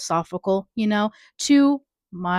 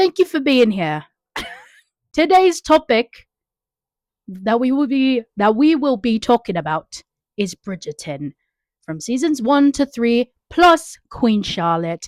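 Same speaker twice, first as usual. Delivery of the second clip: put-on British accent; 2 semitones higher than usual. Opening a podcast episode about Bridgerton: put-on British voice. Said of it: "Let me stop with the British voice".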